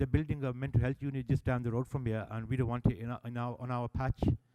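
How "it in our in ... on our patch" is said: ordinary talk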